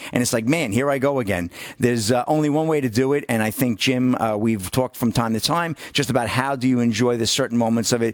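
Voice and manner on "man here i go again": plain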